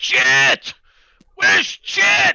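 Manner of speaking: loudest possible, very high-pitched, full-volume yell. In a game, the speaker's character yells for chit as loudly as possible. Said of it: "just in the loudest voice possible, just yell".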